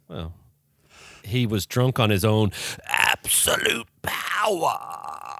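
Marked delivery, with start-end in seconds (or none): 2.8-5.4 slow, put-on sinister would-be villain voice. Speaker tries out a voice for the group, trying to sound evil. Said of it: "I was trying to sound evil".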